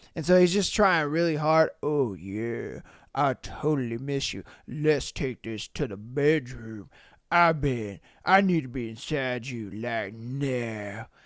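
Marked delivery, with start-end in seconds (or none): 1.8-11.0 forced, strained, fake very low deep voice. Mocking a male character straining for a deep voice: mocking a forced deep voice. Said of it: "trying so hard to make his voice deep".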